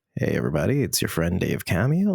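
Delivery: deep, soft ASMR-style baritone voice.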